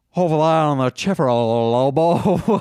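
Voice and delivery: put-on Southern accent, drawling. Showing others a Southern accent after being asked to: Southern accent. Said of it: "I can do a perfect Southern accent".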